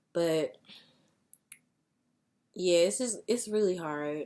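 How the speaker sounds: holding back emotion. Talking about a life that was lost, trying not to get emotional. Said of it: "I'm trying not to get emotional".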